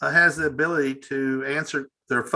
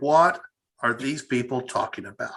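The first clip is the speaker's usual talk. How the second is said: normal talking voice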